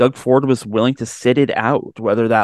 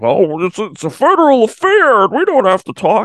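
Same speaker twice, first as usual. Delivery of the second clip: put-on voice, very high pitch, swooping; 9 semitones higher, 4 dB louder than usual. Retelling an excuse from two officials: imitating Jones and Ford. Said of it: "I'm not sure why I'm doing the voice".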